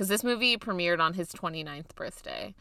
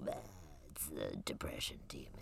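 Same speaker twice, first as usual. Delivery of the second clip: put-on demon voice, lower and quieter; 17 dB quieter than usual. Mocking how antidepressant pills are framed, in a depression demon voice. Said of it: "You do sound like the depression demon".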